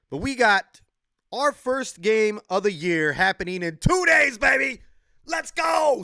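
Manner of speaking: loud, high, hyped-up excited shout. Speaker announcing the team's first game of the year, yelling excitedly. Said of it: "Sorry for yelling".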